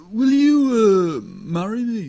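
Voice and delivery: sing-song delivery, the word "you" stretched out. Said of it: "just say, will you marry me in [name]'s voice".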